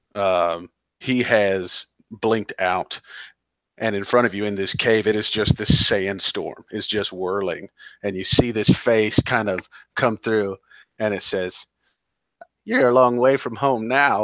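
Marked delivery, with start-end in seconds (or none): 12.6-14.2 put-on old woman voice, higher pitch. Narrating a face in a sandstorm speaking to the group in a cave, old woman voice. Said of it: "that old woman voice blinks out".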